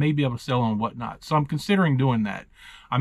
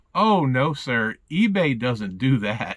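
slow, swooping, heavy mock sarcasm. Retelling the rep's reply about shadow banning: imitating a sarcastic tone. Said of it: "it completely sounded so sarcastic".

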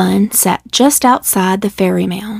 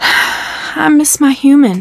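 tender, gentle, pitched-up, very slow, drawn out; 6 semitones higher than usual. A rabbit answers a cat who gently asked what's wrong, softly. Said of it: "answered the rabbit softly".

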